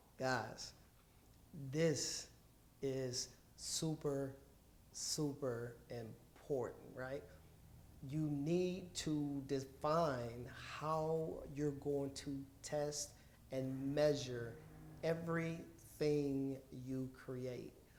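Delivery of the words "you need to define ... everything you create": slow, deliberate emphasis, carefully spelled out word by word. Presenter stressing the test step to the audience: slow deliberate pace. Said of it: "I said that pretty slow".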